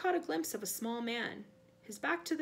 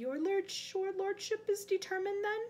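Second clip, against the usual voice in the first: slow, unhurried, pitched-up voice; 8 semitones higher than usual. Addressing his lordship, a man asks whether he is determined, said quietly. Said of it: "Wormtail said quietly".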